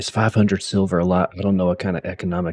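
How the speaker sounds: hushed whisper, spoken aside. Tabletop player, in character, whispering a question to Rotgut: whispering. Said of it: "whisper to Rotgut".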